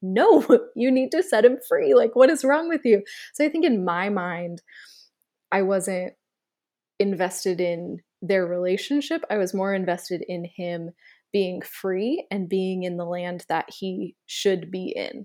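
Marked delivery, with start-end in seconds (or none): 0.0-3.0 raised, high-pitched yelling. Retelling a reaction to a scene on TV: imitating own yell. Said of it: "And I yelled at the T V".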